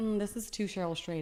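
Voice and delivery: plain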